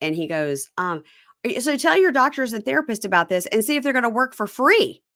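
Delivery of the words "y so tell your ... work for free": mock, furious, angry, pitched-up ranting yell. Retelling a fight about unpaid rent and grants: imitating someone yelling angrily. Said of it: "he's yelling at her about the grants".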